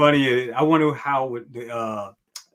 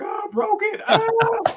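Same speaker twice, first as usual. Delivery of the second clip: very high, mock crying wail. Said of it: "crying like".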